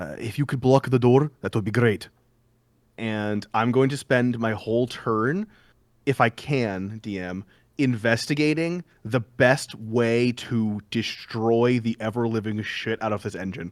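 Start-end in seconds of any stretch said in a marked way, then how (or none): 0.2-2.1 whispering, faster pace. Player character speaking to a party member during a tabletop game, whispering. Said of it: "I'm gonna whisper to Ulrich".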